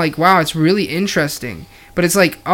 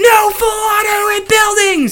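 mock male screaming, higher. Retelling a meme video where players yell at a shooter: imitating guys screaming. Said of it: "the guys are screaming".

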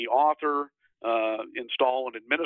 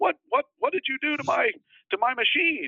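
high-pitched hollering and screaming. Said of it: "starts hollering and screaming".

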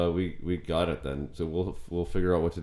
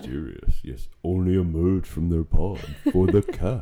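loud, eerie, creepy put-on creature voice; 6 dB louder than usual. Pitching a show about podcasters who live in a pod, in a creepy voice. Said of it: "You have a good creepy voice".

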